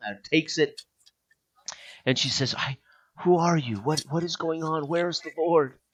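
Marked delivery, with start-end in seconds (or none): 2.6-5.7 weak, feeble, faltering, halting, near tears. Game master voices a gagged captive just after the gag is pulled away, barely able to talk. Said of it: "she she can barely talk".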